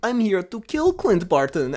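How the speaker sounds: put-on, play-acted Russian accent. Retelling a friend acting in a kids' movie, in a put-on russian accent. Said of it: "you have to do like a Russian accent".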